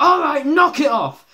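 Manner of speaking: put-on very high, shrill, very loud angry snap. Retelling a cartoon scene where a character snaps: imitating angry snapping. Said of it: "Homer just snaps".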